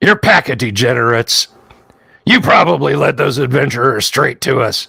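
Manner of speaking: monster-like orc voice. Voicing an orc who calls out through a door: orc voice calling out. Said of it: "the orc voice calls out".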